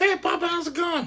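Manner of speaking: very high, squeaky little dog voice. Speaking for the dog as it comes in: voicing a pet dog. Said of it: "So this is my dog".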